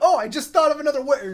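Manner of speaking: put-on high, loud, bright, chipper, laughing chirp.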